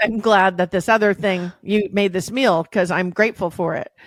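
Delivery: ordinary talk, nothing marked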